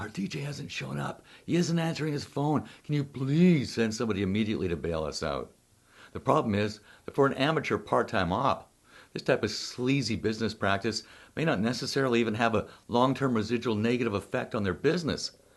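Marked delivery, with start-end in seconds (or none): 0.0-5.5 acted, desperate pleading, begging tone. Retelling a call from a client whose dj did not show: imitating a pleading caller. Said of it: "a pleading voice on the other end saying".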